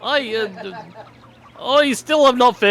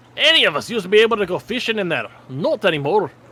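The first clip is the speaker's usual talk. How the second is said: bad, daft, pushed put-on Scottish accent. Speaker complains to the group about the forest, Scrooge McDuck accent. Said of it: "trying to do this stupid Scrooge McDuck accent".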